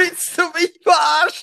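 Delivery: furious, hopping-mad outburst in a very high voice. Retelling a dispute over a withheld receipt, retelling a furious outburst. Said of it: "Ich wirklich auf 180".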